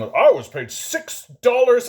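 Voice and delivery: loud, drawn-out mock boomer voice. Quoting what boomers always say about their starting wage, in a boomer impression. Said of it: "I shouldn't do the impression".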